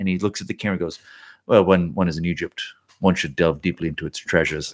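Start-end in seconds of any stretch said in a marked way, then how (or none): 1.4-4.7 low, flat, level deadpan, said dead straight. Retelling a scene to another speaker, imitating Roger Moore's deadpan delivery. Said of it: "he says it so deadpan".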